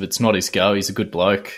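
ordinary talk, nothing marked

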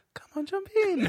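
very high, hushed half-whisper under the breath. Retelling words said at the pool edge to a child: retelling a half-whisper. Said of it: "I just whispered under my breath".

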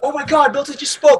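put-on high, excited, amazed kid voice. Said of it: "He's like".

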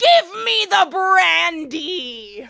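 drawn-out yell, very loud and very slow. Retelling how evil Kirk grabs McCoy: imitating someone screaming. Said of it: "just screams in his face".

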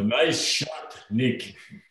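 put-on Russian accent. Asked to repeat a teammate's words after a goal: put-on Russian accent. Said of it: "In your best Russian accent".

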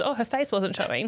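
ordinary delivery

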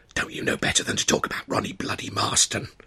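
sharp, hissed words under the breath. A narrator reads a man holding the narrator back out of earshot, hissing. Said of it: "he hissed".

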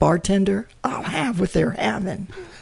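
high, squeaky voice, cracking and breaking. Reading out one slogan after another to the others: voice squeaking and breaking. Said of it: "Did my voice just squeaked and broke?".

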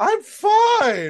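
very high, loud insistent tone, "fine" stretched. Teasing another speaker who insists his team is fine: Ross from Friends impression. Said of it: "You sound like Ross in that episode of Friends".

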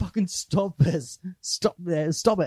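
high-pitched yelling. Retelling a film scene where Ali yells at Lawrence: imitating Ali yelling. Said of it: "just yelling at Lawrence".

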